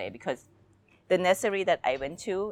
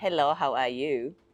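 put-on very heavy, strong Thai accent. Speaker retells a Skype interview, quoting the basic-English reply in a very strong Thai accent. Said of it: "With a very, very Thai accent".

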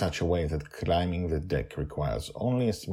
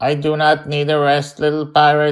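mechanical, high-pitched, level monotone robot voice; 9 semitones higher, 12 dB louder than usual. Narrator reading a story, Mastermind declines an offer to rest: Mastermind's mechanical voice. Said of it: "he says in his mechanical voice".

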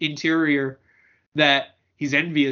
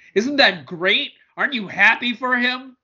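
put-on, gushing, gleeful, high, exuberant enthusiasm; 8 semitones higher, 4 dB louder than usual. Describing the tone a manga's text conveys, mock exuberant glee. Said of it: "with the same degree of exuberance and glee that you just said it".

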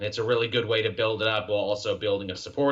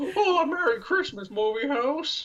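put-on very high, classic Hollywood hero voice, old-film star. Joking after a Hank Pym bit: Jimmy Stewart impression. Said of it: "my Hank Pym sounds like Jimmy Stewart".

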